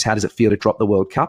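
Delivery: ordinary delivery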